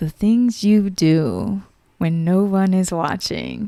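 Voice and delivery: slow, swooping, hushed, drawn-out soft sing-song delivery. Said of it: "sound bit from [name]".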